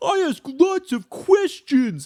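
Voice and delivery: mocking, very high, slow, stupid voice. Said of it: "you're just making a dumb voice".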